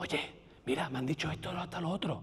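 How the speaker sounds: barely audible, very quiet whispered aside. Showing how different volumes can make different characters, whispered. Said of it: "El susurro".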